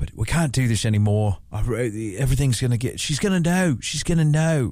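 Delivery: put-on British accent. Retelling what a doctor said when ending an affair, british accent. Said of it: "I'm giving him a British accent".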